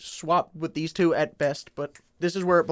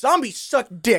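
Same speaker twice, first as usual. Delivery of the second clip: aggrieved venting, voice pitched higher; 5 semitones higher, 3 dB louder than usual. Answering why the game ranks here, venting a grudge. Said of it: "he sounded like he had to get off his chest".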